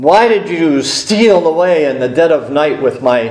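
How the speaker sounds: ordinary talk, nothing marked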